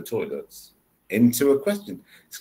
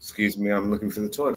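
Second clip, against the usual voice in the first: flat, even, level tone with no lift at the end; 4 semitones lower, 5 dB quieter than usual. Speaker demonstrating question intonation, saying it in a flat tone. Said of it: "that's a flat tone".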